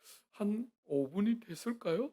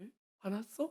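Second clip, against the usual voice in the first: quieter, mock-coy, sly, foxy put-on voice; 6 dB quieter than usual. Speaker retelling how a wife asks her angry husband, mock-coy, foxy tone. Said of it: "쪼끔만 여우같이".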